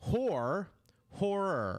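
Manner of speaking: horror enunciated slowly and deliberately, every sound clear. Showing another speaker how the word should be pronounced: slow, careful pronunciation. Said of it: "let me say it slower".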